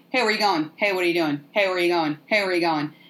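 confrontational, intimidating tough-guy voice. Retelling men blocking visitors' way: imitating male intimidation. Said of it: "that male intimidation thing where you're just like".

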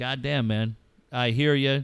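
ordinary talk

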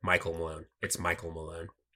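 low, deadpan, flat delivery.

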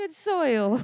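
touch of Italian accent. Leading a group in repeating a phrase, say it with a slight italian accent. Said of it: "with a little bit of an Italian accent".

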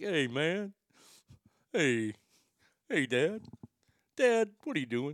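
talking-pet dog character voice. The speaker voices Bubba calling to Dad, in the Bubba voice. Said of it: "That's our Bubba voice".

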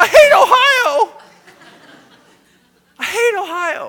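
shrill top-of-lungs scream, very loud, high, slowly dragged. Speaker retells screaming in their rental car, retelling a scream at top of lungs. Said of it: "I scream at the top of my lungs in my car".

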